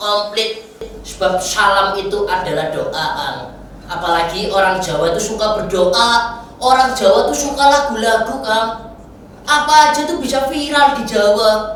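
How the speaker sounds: puppet character voice.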